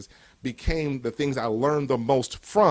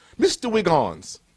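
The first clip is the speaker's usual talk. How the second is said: put-on English professor's accent, pitched up; 5 semitones higher, 4 dB louder than usual. Retelling a science professor calling his name in class: imitating Doctor Leonard's English accent. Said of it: "He had that accent".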